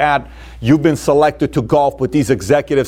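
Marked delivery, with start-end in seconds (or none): none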